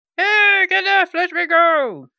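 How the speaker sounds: shrill, very high, loud yell. Player voicing a bunny shouting at her character, yelling. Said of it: "you hear someone yelling and shushing above you".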